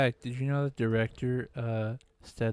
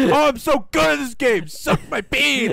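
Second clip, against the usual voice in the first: mock raging, much higher and louder; 14 semitones higher, 11 dB louder than usual. Retelling how Cole kept raging while gaming, imitating Cole's raging. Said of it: "he was still raging".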